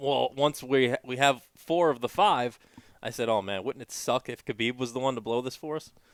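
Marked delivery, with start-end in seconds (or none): none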